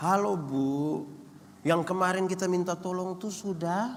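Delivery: very gentle, tender, courteous voice. Acting out a husband phoning a colleague's wife, mock-gentle soft tone. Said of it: "dia lembut sekali".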